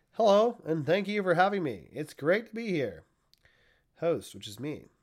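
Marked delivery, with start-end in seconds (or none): 0.2-3.1 pitched-up AI assistant chatbot voice. A show host voices his AI guest Chaz himself, in ChatGPT voice. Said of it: "I'm going to attempt to do ChatGPT's voice".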